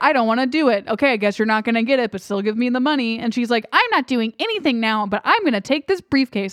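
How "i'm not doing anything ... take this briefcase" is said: put-on, irritating, annoying girlish voice. Quoting a woman in a story, in an annoying girl voice. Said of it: "I'm just doing an annoying voice".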